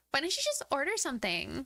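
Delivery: put-on high valley girl whine. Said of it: "I am hearing it in the Valley Girl voice".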